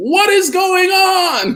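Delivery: high, slow panicked yell.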